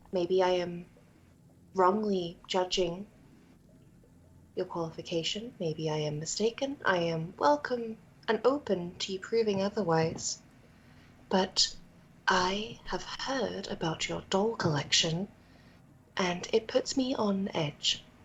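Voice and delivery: whispering. Leaning into a man's ear to warn him, the character speaks whispering. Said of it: "I'm saying this in a whisper".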